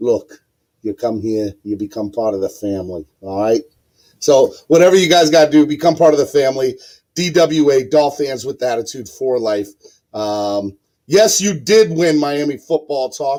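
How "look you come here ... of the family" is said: rusty, put-on Italian accent. Host inviting viewers to join the channel family, doing a Don Corleone impression. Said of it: "my best Don Corleone".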